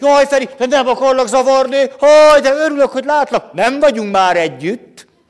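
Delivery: mock, very high, very loud eager delight, gushing. Retelling a person from years ago greeting the speaker, imitating an enthusiastic voice. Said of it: "de ezt a lelkesen mondta".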